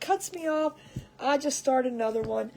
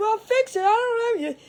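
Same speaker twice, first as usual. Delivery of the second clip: raised, pitched-up, exasperated, frustrated holler; 9 semitones higher, 7 dB louder than usual. Retelling a frustrated live stream moment, imitating herself yelling. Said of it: "I'm sitting there yelling at Ross".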